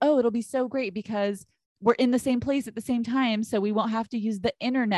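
ordinary delivery

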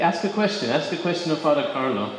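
ordinary talk

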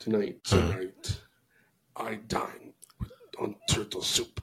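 low, quiet villain voice.

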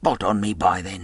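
plain

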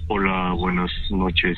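very low voice, charming and gallant. Speaker acting out how a man greets a girl, put-on gallant suitor voice. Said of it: "cuando la ves hasta te cambia la voz".

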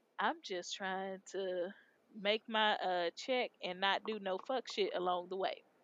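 ordinary talk, nothing marked

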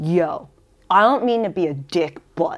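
put-on Bronx accent. Retelling advice a boyfriend gave on what to say, imitating Meatball's Bronx accent. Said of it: "sounds like he's from the bronx".

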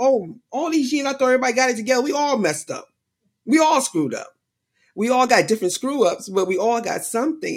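amazed tone of sudden realization.

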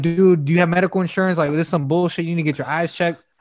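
ordinary delivery

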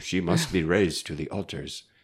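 clumsy, bad put-on German accent. Quoting Benedict XVI's declaration about Hildegard, in a bad German accent. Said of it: "And that was a terrible accent".

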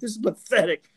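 mock ranting broadcaster. Retelling how a man went off at the NCAA during a game broadcast, imitating someone going off. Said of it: "He was like going off".

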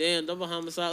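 soft, at-ease, offhand casual aside. Retelling how a woman said a line: imitating a calm offhand remark. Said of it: "like she wasn't trying to be loud".

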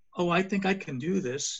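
meek, bashful tone. Advising on talking with authority, demonstrating a timid, shy voice. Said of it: "You are timid and shy".

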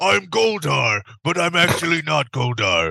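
put-on devil voice. Mocking how the devil Malebolgia talks in the film: Malebolgia voice. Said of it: "Who talks like this?".

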